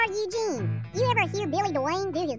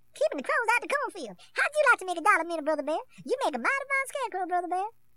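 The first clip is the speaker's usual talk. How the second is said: put-on cartoon rabbit voice. Asked to do another one, performing a Brer Rabbit voice. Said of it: "Do another, Brer Rabbit".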